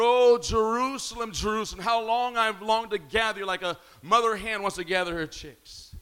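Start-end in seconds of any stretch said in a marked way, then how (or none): none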